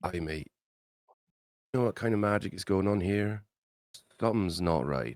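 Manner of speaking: confiding, hushed in-character stage whisper. Leaning over to another player's character to ask about magic: half-whispering in character. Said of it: "and just whisper".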